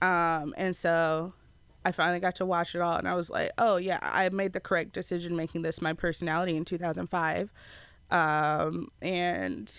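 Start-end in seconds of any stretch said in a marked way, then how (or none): none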